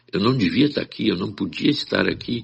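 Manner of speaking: put-on soft, hushed, quiet voice. Retelling what a patient said on arriving at the consultation: imitating someone speaking softly. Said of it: "falando baixinho".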